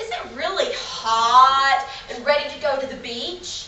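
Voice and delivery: playful, sing-song tune.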